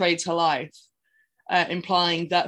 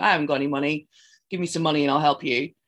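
put-on angry voice, lower; 3 semitones lower than usual. Retelling a story, the speaker quotes Ian in his basement; mock-angry as Ian. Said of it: "being very angry".

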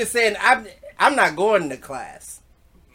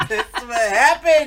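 slow, high mock voice through laughter. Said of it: "He said".

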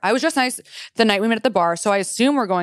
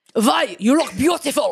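put-on German accent drifting into pirate accent; 4 semitones higher than usual. Friends try out accents; one says this to Vai, put-on accent sounding like pirate. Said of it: "You sound like a fucking pirate".

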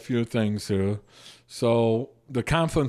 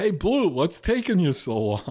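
needling, sing-song, sarcastic tone; 6 semitones higher than usual. Retelling a heckle from the stands at a jv game; retelling a sarcastic heckle. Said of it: "only afensky would be that sarcastic".

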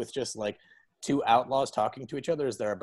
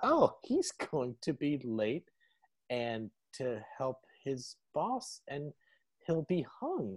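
slow put-on voice with swooping pitch; 3 semitones higher, 4 dB quieter than usual. Quoting a line from Lance's bit, doing an Emo Philips voice. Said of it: "I'll just do the emo Phillips voice".

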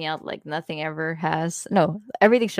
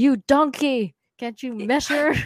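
loud, high, berating, scolding shout; 7 semitones higher, 5 dB louder than usual. Unable to get measurements exact, voicing an inner scolding; Gordon Ramsay shouting impression. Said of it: "I had my own inner Gordon Ramsay shouting at me like".

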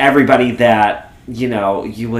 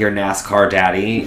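usual speaking voice

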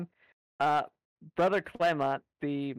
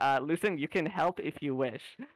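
ordinary talk

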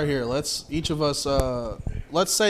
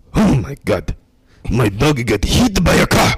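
imitated Japanese accent; 3 semitones lower, 9 dB louder than usual. Told by the host to say it in a japanese accent: japanese accent. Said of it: "you're going to say that in a Japanese accent".

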